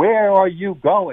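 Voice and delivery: put-on, high-pitched screamed delivery. Retelling a passenger screaming in the car, imitating someone screaming. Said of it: "she starts screaming in the car".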